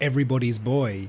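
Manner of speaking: ordinary delivery, nothing marked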